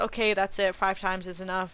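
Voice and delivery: ordinary talk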